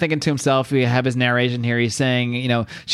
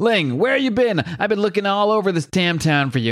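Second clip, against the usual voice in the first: high-pitched, hollering yell; 7 semitones higher than usual. Retelling a Double Dragon 2 scene where Billy yells for Ling: retelling Billy's yell. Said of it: "And this guy yells".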